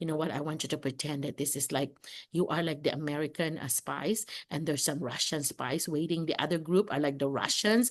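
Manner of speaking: low, soft, hushed teacher-like voice.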